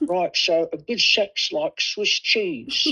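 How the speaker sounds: put-on drawn-out Cockney old man. Retelling what a veteran English gaffer told him: Cockney accent. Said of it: "he said in his Cockney accent".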